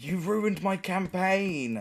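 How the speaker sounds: high, furious scream dragged out slowly. Retelling being grabbed against a wall in a fight: imitating someone screaming. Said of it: "And he screams at me".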